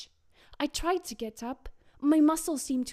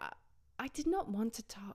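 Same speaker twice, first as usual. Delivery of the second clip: ordinary delivery, nothing marked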